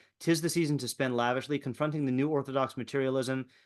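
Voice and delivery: ordinary delivery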